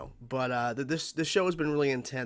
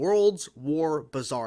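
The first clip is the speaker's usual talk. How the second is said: slow, loud, careful word-by-word enunciation; 3 semitones higher, 5 dB louder than usual. Reading out an episode title, said slowly. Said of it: "I had to say that slow".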